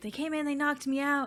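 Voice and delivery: high, freaked-out, rushed frantic blurt of words. Retelling a scene where a woman arrives covered in blood, imitating a frantic woman. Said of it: "She's very frantic and she's like".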